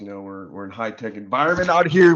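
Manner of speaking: yelling loudly.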